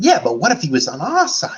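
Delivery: put-on cartoon character voice, high and swooping. Describing the character voices he had, quoting a line in Timon voice. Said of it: "And then I had my Timon voice".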